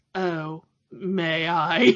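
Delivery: put-on dry, snide, sarcastic waiter voice. Retelling a film scene as the waiter answering Kermit: imitating a sarcastic waiter. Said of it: "the very sarcastic waiter".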